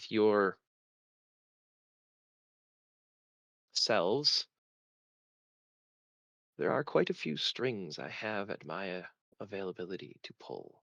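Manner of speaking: cryptic, hinting, mysterious, secretive tone. A player speaking in character to the other players, in a mysterious tone. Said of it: "Don't sound so mysterious".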